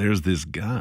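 put-on quiet, hushed voice. Speaker acting out someone starting a food story, mimicking a quiet lean-in. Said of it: "leans into you and just kind of quietly goes".

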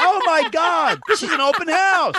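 very high, shrill, slow, drawn-out yelling. Retelling a woman popping her head out a door: imitating someone yelling. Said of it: "She's yelling at you".

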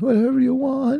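very high-pitched crying voice.

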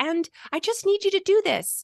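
falsetto voice. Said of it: "if we talk like this in our falsetto".

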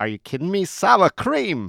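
put-on Yiddish-inflected accent.

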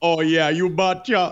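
put-on voice with Jamaican accent. Answering as the physicist in the bit, slipping accent: Einstein impression in Jamaican accent. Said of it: "slipped right into Jamaican by the end of it".

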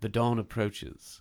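put-on elderly British gentleman's voice. Describing how songs open with spoken lines, in an old British man voice. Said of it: "what sounds like an old British man being like".

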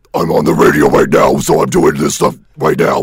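very low, very loud, deep growl. Asked to show it on air, doing a Cookie Monster growl. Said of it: "Do it".

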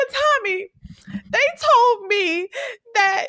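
put-on, very high, whiny, whimpering crying voice. Retelling a scene, the speaker voices Keisha answering Tommy, imitating Keisha crying. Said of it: "I like how you do her cry voice".

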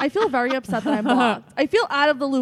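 loud yelling.

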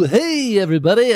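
put-on very high pitched children's TV character voice. Recalling the kids' shows his daughters watched: Barney voice. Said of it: "I could do that voice".

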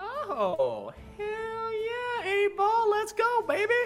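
very high, squeaky voice at top of range. Cheering a Magic 8 Ball's answer about a bet, in a very high-pitched voice. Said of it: "highest I've heard your voice reach".

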